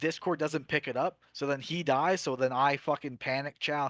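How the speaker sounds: ordinary delivery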